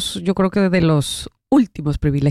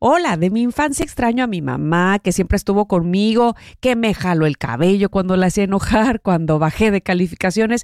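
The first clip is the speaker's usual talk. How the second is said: ordinary delivery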